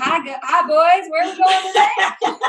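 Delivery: exaggerated, put-on Southern US accent. Describing suddenly switching into accents while driving, doing the Southern one: Southern accent. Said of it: "I'm like in the southern accent".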